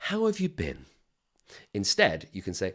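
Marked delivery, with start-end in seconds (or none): 0.0-0.8 very high, worried, concerned, sympathetic tone. Demonstrating a greeting to avoid because it sounds like something is wrong, concerned, worried tone. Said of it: "and we're saying".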